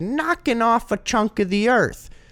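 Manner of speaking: squeaky, very high-pitched voice. Retelling what a classmate said in class: imitating a classmate's high-pitched voice. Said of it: "I'll never forget the way he said".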